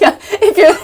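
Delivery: high, loud, giggling and laughing through the words.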